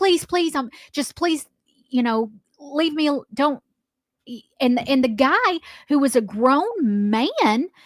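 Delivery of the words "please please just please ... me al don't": put-on scared child pleading, halting, words breaking off. Retelling a scared boy's plea to an angry captain: imitating a scared boy pleading. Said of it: "he just sounds like, he's like".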